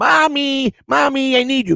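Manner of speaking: mock, pitched way up, shrill full-lung yelling. Retelling how he shouted for mommy across Walmart, acting out his own yell. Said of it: "yelling at the top of".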